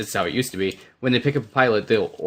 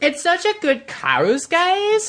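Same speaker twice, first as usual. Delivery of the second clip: very high, swooping sing-song tone. Mocking a TV character's way of talking: imitating Marissa's speech. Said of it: "she goes".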